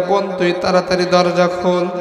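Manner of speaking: normal talking voice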